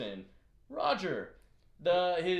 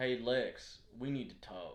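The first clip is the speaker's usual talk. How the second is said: put-on slow, drawled Southern accent; 7 semitones lower, 7 dB quieter than usual. Imitating Roger's newfound accent from the episode: Roger's southern accent. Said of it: "with the southern accent".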